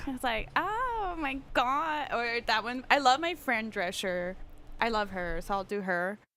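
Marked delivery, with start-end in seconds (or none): 0.6-2.1 exaggerated Valley Girl accent. Asked to show a stereotypical accent: Valley Girl accent. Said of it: "Can you do Valley Girl? Yeah".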